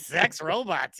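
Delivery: put-on, overly happy voice. Teasing a questioner about their face: imitating Izzy sounding way too happy. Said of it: "You looked way too happy".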